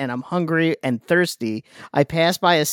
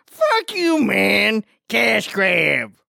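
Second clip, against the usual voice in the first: very drawn-out, rough, creaky, swooping comic voice; 4 semitones higher than usual. Reading a listener comment aloud, doing the voice from a Tim Robinson sketch. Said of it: "just an excuse for me to do the voice".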